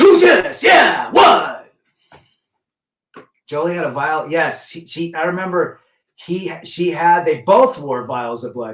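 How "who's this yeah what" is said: very loud, very high-pitched shout. Imagining calling the actor on the phone, in a Pacino voice. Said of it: "In that Pacino voice".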